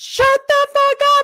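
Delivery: very high, loud, exasperated shriek. Retelling watching the trial on tv, imitating own screaming. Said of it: "I was screaming at the T V".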